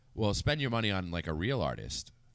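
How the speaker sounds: normal talking voice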